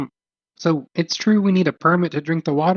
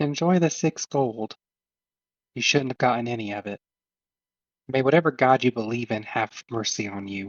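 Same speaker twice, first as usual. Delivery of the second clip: hushed half-whisper throughout; 4 semitones lower, 5 dB quieter than usual. Messaging someone nearby who can't see where the voice comes from: half-whispered message. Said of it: "that's all I'm gonna whisper".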